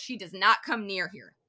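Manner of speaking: mock snarling, acted out. Recounting a story scene, giving a character's refusal: retelling a snarl. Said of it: "He snarls".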